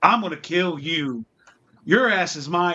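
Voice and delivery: mock hostile, belligerent, threatening, menacing delivery. Retelling what a spirit says during investigations: imitating a belligerent spirit. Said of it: "he gets really belligerent".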